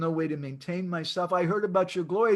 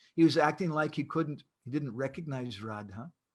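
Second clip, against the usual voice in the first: normal talking voice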